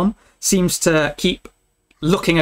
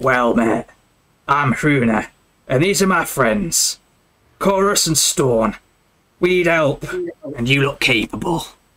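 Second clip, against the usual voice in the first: raspy voice, muffled through fabric. Narrating a scene, voice the third stranger speaking through a wool scarf: Hruna's raspy, muffled voice. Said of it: "through a thick wool scarf in a raspy voice".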